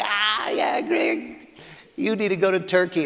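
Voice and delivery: mock amused, laughing, drawn-out joking tone. Retelling how a fellow missionary laughed at the remark: imitating a joking laugh. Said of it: "Robert laughed, like".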